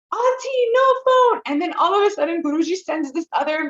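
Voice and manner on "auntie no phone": very high, loud, scolding scream. Retelling how an auntie stopped her using a phone: imitating someone screaming. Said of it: "this auntie comes and screams".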